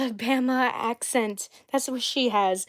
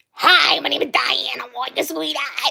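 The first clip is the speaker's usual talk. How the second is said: hoarse, hacking, rough, creaky heavy smoker's voice. Showing how the character Diana talks: imitating Diana's voice. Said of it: "All she goes is".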